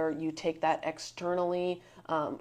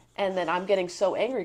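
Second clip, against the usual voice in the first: ordinary delivery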